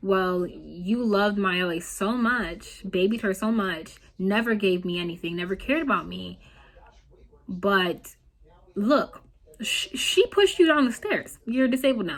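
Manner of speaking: ordinary delivery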